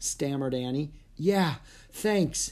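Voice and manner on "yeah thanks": said on a breath, much higher pitch. Narrator reads a character thanking the woman who took them in, breathed. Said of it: "breathed Jack".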